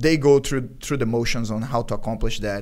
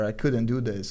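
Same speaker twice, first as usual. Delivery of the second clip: ordinary delivery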